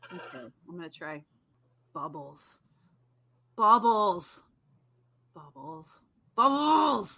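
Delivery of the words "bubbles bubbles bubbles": cross, angry, grouchy, not cute. Speaker taking a turn at saying bubbles, angry and grouchy. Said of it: "do it angry, do it grouchy".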